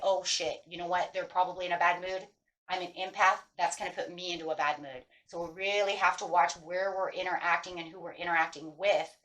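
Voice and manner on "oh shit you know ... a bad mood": usual speaking voice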